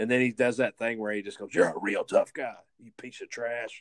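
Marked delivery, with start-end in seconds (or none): 1.5-3.8 put-on drill-sergeant yell, slower. Recounting a scene, the speaker imitates Austin yelling at Stallone: Austin's drill-sergeant yell. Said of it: "yelling at Stallone like a drill sergeant".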